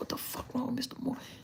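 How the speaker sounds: fast, hushed whispered mutter under the breath. Retelling what he used to say as a child: retelling a mutter under breath. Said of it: "low under my breath, I said".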